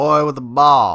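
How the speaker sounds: put-on cowboy voice. Retelling a scene, Razorus answers what he sees, in a cowboy voice. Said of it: "that's my great cowboy impression".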